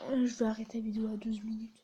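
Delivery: soft, unvoiced whispered aside.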